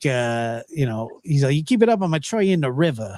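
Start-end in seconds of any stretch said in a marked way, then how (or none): 1.5-3.2 put-on New Jersey accent, threatening. Quoting an uncle from new jersey: imitating uncle's new jersey accent. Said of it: "he had that Jersey".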